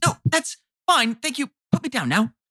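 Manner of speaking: put-on very high, complaining voice in a British accent. Dangling from talons, voicing Lucian complaining in a British accent. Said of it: "Lucian's just complaining in a British accent".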